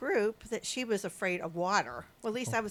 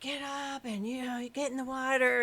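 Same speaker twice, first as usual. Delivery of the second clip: mild, half-shouted yell; 5 semitones higher than usual. Retelling how instructors yelled at a scared swimmer: imitating instructors screaming. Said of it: "instructors were screaming at her".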